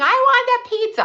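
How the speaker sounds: put-on piercing, very high, shrill child's scream. Retelling a child demanding pizza: imitating a child screaming. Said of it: "one of my kids screaming".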